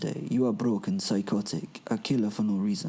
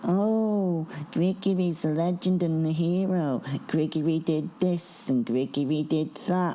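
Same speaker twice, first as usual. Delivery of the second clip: weak, whiny voice, pitched up, oh drawn out; 8 semitones higher than usual. Mocking what the crowd keeps telling him, in a put-on weak, whiny voice. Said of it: "I put on a weak, whiny voice".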